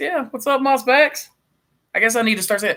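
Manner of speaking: very high, cracking, breaking, congested voice. Returning a greeting to Kevin and another person, voice cracking. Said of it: "my voice is cracking".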